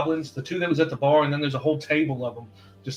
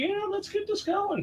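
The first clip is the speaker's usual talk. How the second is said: put-on drunk goblin voice, higher and quieter; 6 dB quieter than usual. Voicing dancing goblins behind the group: drunk goblin voice. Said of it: "Just drunk as can be".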